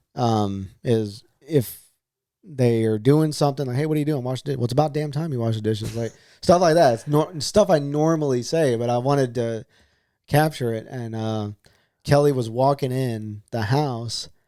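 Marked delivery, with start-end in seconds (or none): none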